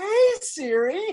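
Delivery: very high, put-on super-happy chirping voice. Speaker acting out greeting the voice assistant again, mock super happy. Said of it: "I'm pissed off about something".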